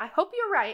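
shrill, high-pitched character voice. Two voices talk behind a door; the shrill one replies to the lower one, in a shrill voice. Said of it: "the shrill voice again goes".

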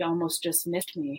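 soft, menacing, foreboding, ominous tone. Retelling a dream about a bus driver, retelling an ominous line. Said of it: "he says this really ominously".

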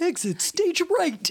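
very high, super lispy cartoon tiger voice. Describing a Hanna-Barbera tiger cartoon, quoting him in a super lispy voice. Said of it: "He had like a super lispy".

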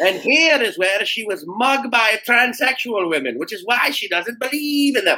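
bad put-on Scottish accent, very high-pitched. Narrating a scene at a bus stop, in a terrible Scottish accent. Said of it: "That's a terrible Scottish accent".

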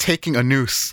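ordinary delivery

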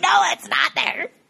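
acted-out high, raspy, rough-edged scream. Imagining Karen correcting a wrong location: imitating Karen screaming. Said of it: "Karen's voice in my head screaming at me".

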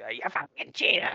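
put-on New York accent with a chain smoker's voice. Imitating a New York guy in their group, smoker New York voice. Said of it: "he's got like that smoker New York voice".

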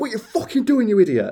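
very high, rapid-fire, angry broad Yorkshire yell. Retelling when someone dropped his new phone, the speaker re-enacts: retelling an angry broad Yorkshire outburst. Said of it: "so Yorkshire and so broad, so fast".

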